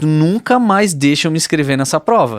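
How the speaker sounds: mock furious angry outburst. Recounting what she told another woman back then, retelling an angry outburst. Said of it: "Tava com uma raiva".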